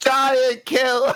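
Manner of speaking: shouting in character. Joining a crowd's cheer as a character: shouting in character. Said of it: "I start shouting".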